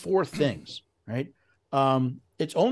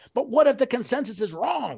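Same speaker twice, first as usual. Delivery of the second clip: raised, pitched-up loud yell; 8 semitones higher than usual. Speaker reenacts yelling at their phone during an interview; retelling a yell. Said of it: "i'm yelling at my phone going".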